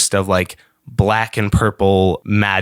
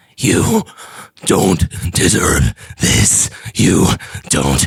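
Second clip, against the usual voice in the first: slow, half-formed bird creature voice, each word drawn out; 3 semitones lower than usual. Voicing a half-formed humanoid bird creature speaking to a player: voicing a half-formed humanoid bird creature. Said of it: "you hear the voice go".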